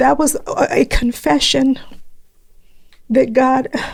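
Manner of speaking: high, tearful voice breaking while holding back tears.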